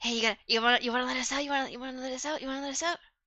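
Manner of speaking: hushed, half-whispered goblin voice. Voicing tied-up goblins asking the players to free them: half-whispering as goblins. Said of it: "They start whispering".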